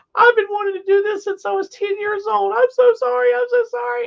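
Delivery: mock sobbing through words, very high and loud. Retelling how Becca spoke in the elevator with tears: imitating Becca crying. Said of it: "tears just whoosh".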